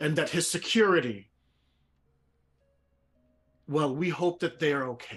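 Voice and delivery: loud, booming, commanding, authoritative voice. Voicing a character who addresses a crowd: booming voice of authority. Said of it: "fill this entire amphitheater with my voice".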